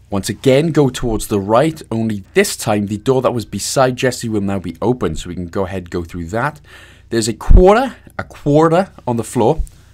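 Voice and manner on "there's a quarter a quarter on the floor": clumsy put-on American accent, pitched up. Pointing out a quarter on the floor in a game: bad american accent. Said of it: "bad attempt at American accent there".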